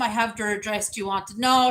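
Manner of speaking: usual speaking voice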